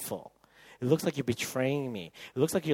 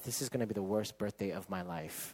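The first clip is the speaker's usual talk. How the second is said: muttered under the breath, lower and quieter; 5 semitones lower, 10 dB quieter than usual. Retelling what she said about her birthday: imitating someone muttering under breath. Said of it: "talking under her breath".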